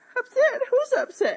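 close to crying. Told not to get so upset, the speaker denies it; on the verge of tears. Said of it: "You sound like you're going to burst out into tears".

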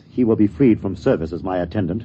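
plain reading voice

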